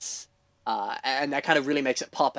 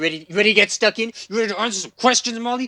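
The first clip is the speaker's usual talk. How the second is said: pushy, needling, aggressive, pitched-up badgering tone; 7 semitones higher, 4 dB louder than usual. Podcast host asks co-host molly if she's ready for audience questions, aggressive. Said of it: "you're getting aggressive with me".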